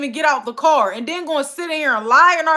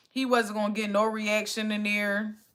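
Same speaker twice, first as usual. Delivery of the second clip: ordinary talk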